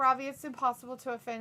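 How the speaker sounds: ordinary talk, nothing marked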